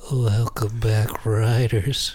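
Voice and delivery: sultry, seductive, sexy voice. Trying the show's opening greeting again on request; sexy voice. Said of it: "now say it sexy".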